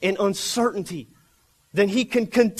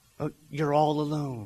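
half-whispered, hushed, pitched very low; 7 semitones lower, 6 dB quieter than usual. Telling believers how the snake half-whispers into their ears, imitating the snake's half-whisper. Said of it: "he says".

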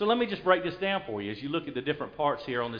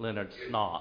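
mock British accent, lower and quieter; 5 semitones lower, 5 dB quieter than usual. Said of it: "I always say it like I'm British".

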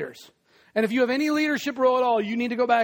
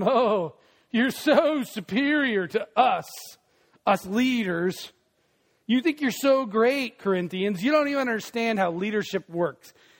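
acted, mock-sarcastic tone. Speaker retells what a leader told the people who got it backwards, acting out a sarcastic remark. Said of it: "Paul says to them with sarcasm".

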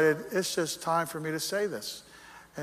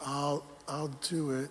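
put-on wavering voice, quieter; 3 semitones lower, 7 dB quieter than usual. Recounting someone's weak nod of agreement, the speaker imitates a wavering voice. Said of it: "you could already hear the wavering of the voice".

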